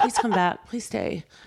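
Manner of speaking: put-on beaten-down, defeated pleading tone. Retelling a host's plea for a guest to come back: imitating a defeated Andy. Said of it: "so defeated".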